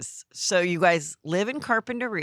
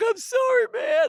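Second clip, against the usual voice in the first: put-on very high, weepy, crying, drunk pleading tone. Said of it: "he's, like, crying".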